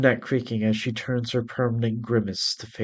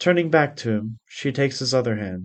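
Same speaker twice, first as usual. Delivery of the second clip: ordinary delivery, nothing marked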